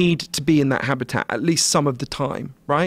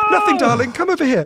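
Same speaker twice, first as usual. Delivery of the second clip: genteel, polite British voice, pitched up; 10 semitones higher than usual. Retelling how parents at a zoo hushed a child: imitating a polite British parent. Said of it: "polite British parents would be like".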